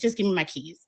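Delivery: ordinary delivery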